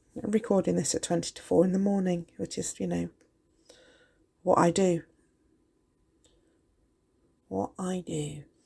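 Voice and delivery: croaky voice. Speaker recording a resin tutorial at twenty to four in the morning, croaky voice. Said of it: "I must apologise for my croaky voice".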